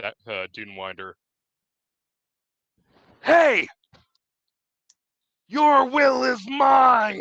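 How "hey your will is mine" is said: high, full-volume shout. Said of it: "before shouting at the".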